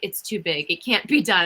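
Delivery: normal talking voice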